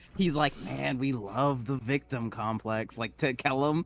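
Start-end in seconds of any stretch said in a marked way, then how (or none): 0.7-3.0 low, grumbled, half-swallowed mutter under the breath. Voicing a character commenting to another character: muttered under his breath. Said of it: "saying it under his breath".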